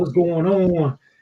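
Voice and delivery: light, casual put-on southern twang. Imitating someone who came back from staying with his cousin down south, imitating a little twang. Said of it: "He had a little twang in his voice".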